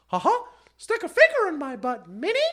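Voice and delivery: very high, squeaky cartoonish voice. Speaker describing how he makes the Mickey Mouse bit dirty, in a Mickey Mouse voice. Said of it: "I take the Mickey Mouse thing".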